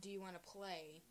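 ordinary talk

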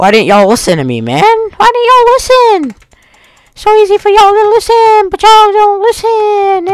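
exasperated, upset, frustrated griping with pitch climbing. Player who just lost a hard challenge, scolding the others, upset and frustrated. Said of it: "It's making me really upset".

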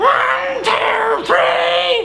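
very high, loud, nasal voice. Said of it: "a bit of nasal now".

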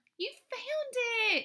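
delighted, happy, very high-pitched exclamation. [name] comes through the door and tells Jess she found it, happily. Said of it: "[name] said happily".

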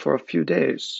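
ordinary delivery, nothing marked

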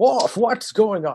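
grand drawn-out captain voice. Quoting a Star Trek captain to Worf: Jean-Luc Picard impression like Sean Connery. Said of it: "That sounds more like Sean Connery being Jean-Luc Picard".

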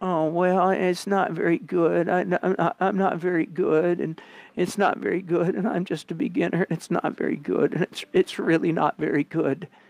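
high, teasing parody voice poking fun. Imitating beginner artists putting their painting on the easel, mocking imitation of beginner artists. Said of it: "I'm just mocking the heck out of some of you".

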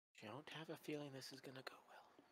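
quiet muttering under the breath. A player's character, watched by a group sizing them up, mutters under the breath. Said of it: "I just mutter that under my breath".

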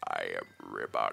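rough, creaky, grating character voice. Showing how the villager's voice has been made to sound: Ribot voice. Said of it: "I've tried to make it more like".

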